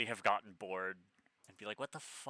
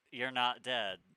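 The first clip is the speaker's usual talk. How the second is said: put-on disappointed tone; 3 semitones higher than usual. Retelling a character's words after she falls: imitating a disappointed tone. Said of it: "Says with a notable disappointment in her voice".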